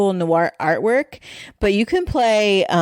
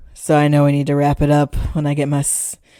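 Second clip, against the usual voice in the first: low, smoky late-night voice. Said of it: "my smoky voice on".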